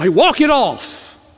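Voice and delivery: scornful, offhand, disdainful and dismissive tone. Speaker acts out a remark god does not make to the suffering: mock-disdainful. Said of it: "with disdain tell you".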